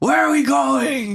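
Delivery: put-on very high, shrill, drunken hollering scream. Retelling how a drunk friend shouted across a parking lot: imitating someone screaming. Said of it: "he just keeps screaming".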